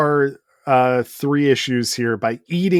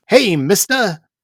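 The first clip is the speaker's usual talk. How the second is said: put-on loud, high, weird cartoonish Brooklyn street-kid accent; 7 semitones higher, 5 dB louder than usual. Imitating a comic sidekick's talk: weird cartoonish Brooklyn accent. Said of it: "doing a weird cartoonish Brooklyn accent".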